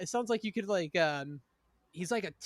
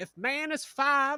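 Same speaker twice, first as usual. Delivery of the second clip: high, raised southern preaching voice; 7 semitones higher, 5 dB louder than usual. Describing a tv church show, imitating a southern churchgoer. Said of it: "sounds like someone from the south that goes to church".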